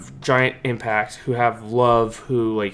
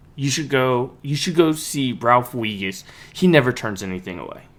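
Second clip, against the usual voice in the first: normal talking voice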